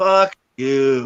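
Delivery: ghostly, spirit-like voice. Retelling a curse heard in the basement: imitating a spirit voice cursing. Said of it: "Exactly that tone".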